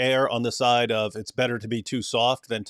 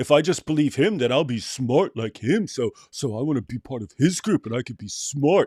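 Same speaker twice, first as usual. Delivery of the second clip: put-on smart, clever-sounding British accent. Mocking atheists by quoting their hero: Richard Dawkins impression. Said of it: "You've got a pretty good Dawkins impression".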